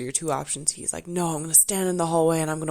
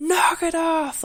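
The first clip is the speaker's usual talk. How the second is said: put-on giant voice, very high, loud booming bellow; 13 semitones higher, 5 dB louder than usual. Retelling someone yelling at the security guards: imitating a loud giant-like yell. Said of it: "yelling all over the place at the security guards".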